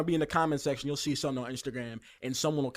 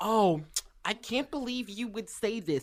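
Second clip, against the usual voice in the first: put-on offended voice, higher pitched; 7 semitones higher than usual. Mocking an offended commenter going into the comment section: imitating Sabrina_69 as an offended commenter. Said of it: "being like".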